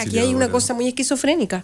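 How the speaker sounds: ordinary talk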